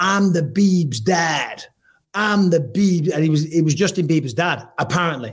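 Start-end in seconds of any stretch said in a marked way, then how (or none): 0.0-3.1 play-acted drunk man calling out, drawn out. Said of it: "he's screaming out".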